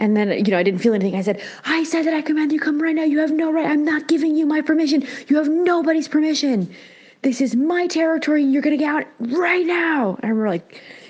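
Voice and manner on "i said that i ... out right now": put-on shrill, fierce, very high commanding scream. Retelling commanding something to get out of the body: imitating own past screaming. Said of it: "screaming at it".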